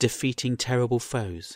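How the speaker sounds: plain reading voice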